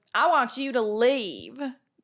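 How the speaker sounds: very slow, loud southern drawl. Quoting what a woman said in an iconic moment of the season, put-on southern accent. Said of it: "I got my southern accent down".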